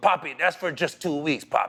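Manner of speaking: put-on Dominican accent. Retelling a teammate explaining a big check: imitating Rafael Furcal's Dominican accent. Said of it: "you know how Dominicans talk".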